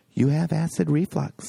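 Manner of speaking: put-on whisper. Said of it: "I hear this whisper".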